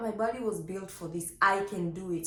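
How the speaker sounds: ordinary talk, nothing marked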